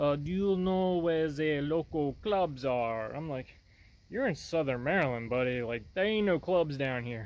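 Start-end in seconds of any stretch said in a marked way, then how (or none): 0.1-3.1 put-on heaviest Russian accent, laid on thick, slow. Retelling strangers leaning out of a car in a Walmart parking lot: thickest Russian accent. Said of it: "with like the thickest Russian accent I've ever heard".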